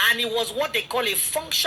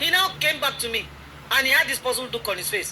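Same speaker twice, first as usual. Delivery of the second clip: ordinary talk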